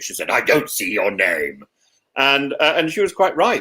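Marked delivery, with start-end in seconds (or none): 0.3-1.6 put-on very deep teacher-like voice, even lower. Retelling what the head teacher said in her office: imitating a very deep voice. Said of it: "she had a very deep voice".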